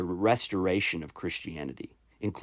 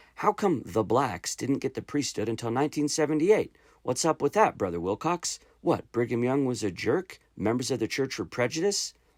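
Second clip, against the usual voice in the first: scornful, mocking, sarcastic, pitched-up tone; 6 semitones higher than usual. Reading out a quoted speaker acting out a question: imitating a sarcastic tone. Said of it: "his tone was really sarcastic like that".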